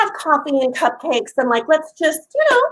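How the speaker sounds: usual speaking voice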